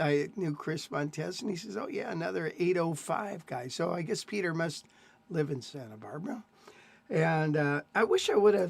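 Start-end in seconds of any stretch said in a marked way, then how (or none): none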